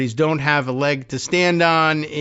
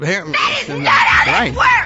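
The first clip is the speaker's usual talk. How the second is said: shouting with a raised, louder voice; 3 semitones higher, 4 dB louder than usual. Objecting to a claimed correction of a court order: raised voice. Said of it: "I didn't mean to raise my voice".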